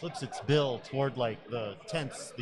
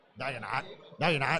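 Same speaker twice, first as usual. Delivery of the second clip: harsh, raspy, rough, scratchy crow voice. Playing a crow answering someone who claims to be human, in a harsh raspy crow voice. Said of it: "harsh raspy kind of voice".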